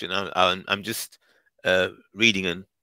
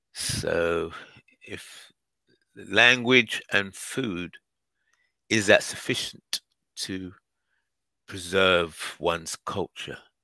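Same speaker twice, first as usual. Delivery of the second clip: very slow, deliberate, thinking-aloud pondering tone. A speaker poses a question while thinking as he talks, very slow. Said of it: "Why is he speaking so slow?".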